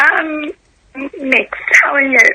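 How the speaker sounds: worn-out, failing hoarse voice, nearly giving out. A caller answers the host's greeting on the phone, hoarse, losing voice. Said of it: "losing your voice".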